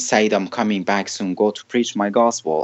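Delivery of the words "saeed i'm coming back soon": usual speaking voice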